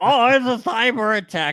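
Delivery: high, loud panicked squeal. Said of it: "And they're just like".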